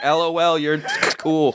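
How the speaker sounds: put-on hot, high, slow, stretched high-school-girl voice. Mocking own texting habits: imitating a hot high school girl. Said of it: "I sound like a hot high school girl".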